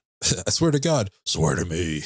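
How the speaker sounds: slow, weird growl. Quoting a line from the Batman movies: Batman voice. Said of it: "his weird voice when he's in the cowl".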